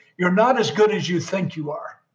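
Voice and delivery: normal talking voice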